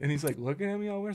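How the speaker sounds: ordinary delivery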